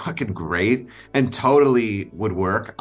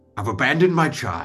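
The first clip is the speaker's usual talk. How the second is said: intense, dramatic, raised pitch, like a film climax; 5 semitones higher than usual. Asked by another speaker to do the scene: Daniel Day-Lewis impression. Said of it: "can you do the Daniel Day-Lewis scene".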